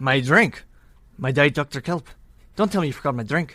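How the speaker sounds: put-on low voice, Liverpool accent.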